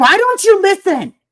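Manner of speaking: very high-pitched, put-on Southern crazy rant. Imitating someone going Southern crazy at a listener: imitating Summer going Southern crazy. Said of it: "have you seen her go Southern crazy?".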